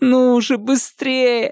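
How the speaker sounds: very high, strained moan through clenched teeth. A woman flips through a book's pages, moaning through gritted teeth. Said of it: "сквозь зубы стонала она".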